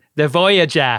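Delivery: thick Boston accent with a long drawn-out "ah" vowel. Pitching a new way to say a name: thick Boston accent. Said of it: "like in a thick Boston accent".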